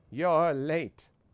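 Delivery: put-on high wizened elderly voice. A game narrator voices someone inside a hut answering a knock, in a wizened voice. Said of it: "a wizened voice calls".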